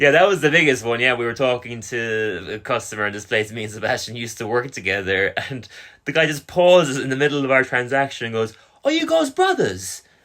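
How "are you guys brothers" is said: put-on British accent, very high-pitched. Retelling a customer's question mid-transaction: imitating a British customer's accent. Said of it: "I remember that British accent".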